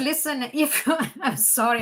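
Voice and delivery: speech broken up by laughter throughout. Reading newly drawn tarot cards for viewers, laughing while talking. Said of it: "I'm laughing now".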